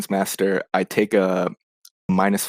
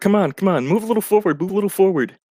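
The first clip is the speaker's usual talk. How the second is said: very high-pitched, coaxing, goading voice; 11 semitones higher, 3 dB louder than usual. Acting out the character backing up and goading a monster: goading. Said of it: "goading her".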